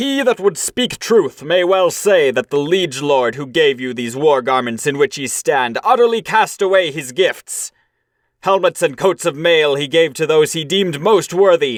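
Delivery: angry, stern, solemn, reproachful, cried out. Narrator reads a warrior's words as he rebukes the cowards, angry rebuke, cried out. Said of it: "Then [name], sorrowful in soul, looked with anger at the cowards. No soft words had he for the craven-hearted crew. / he cried".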